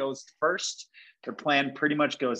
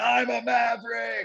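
put-on raw, hoarse, high-pitched scream; 10 semitones higher than usual. Retelling what a reality show contestant screamed in the club: imitating someone screaming. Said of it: "he's screaming".

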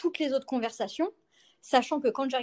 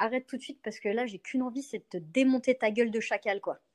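ordinary talk

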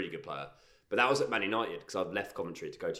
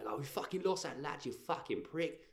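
mock angry, raging, sweary rant; 8 semitones higher, 6 dB quieter than usual. Imagining a footballer kicking off after a loss: imitating Zico kicking off. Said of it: "imagine him kicking off and going".

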